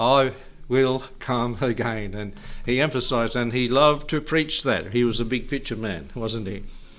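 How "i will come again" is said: put-on slow American accent. Quoting a man who loved to preach these words, in M.A. Butler's American accent. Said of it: "In American accent, like he did".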